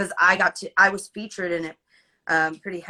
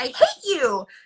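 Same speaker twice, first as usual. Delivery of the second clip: high-pitched, exasperated outburst with heightened drama; 7 semitones higher than usual. Retelling redoing the line after the director's note: retelling own high-pitched exasperated line. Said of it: "really high-pitched, like you're exasperated".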